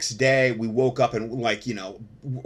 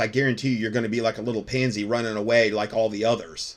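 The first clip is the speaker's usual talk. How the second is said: plain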